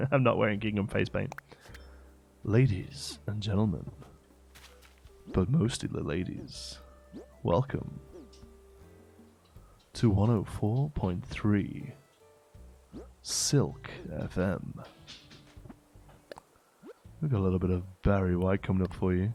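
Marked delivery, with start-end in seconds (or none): 2.4-19.3 late-night radio DJ patter. Performing a radio station intro in an after-dark DJ voice. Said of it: "Should we do our after dark D J voice?".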